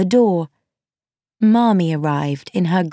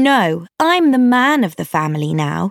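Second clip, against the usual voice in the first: plain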